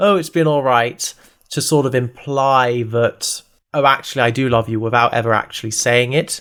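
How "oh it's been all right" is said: mock sarcastic tone, higher. Describing how he mocks her question, acting out his words: retelling a sarcastic remark.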